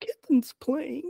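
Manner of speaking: sad delivery. Proving any phrase can be said sadly, said sadly.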